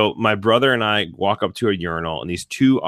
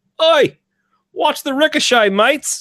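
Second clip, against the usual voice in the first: put-on loud, shrill, high shouting in Australian accent; 5 dB louder than usual. Retelling a guy yelling to him and his brother; yelling in Australian accent. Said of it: "first time I ever heard an Australian accent".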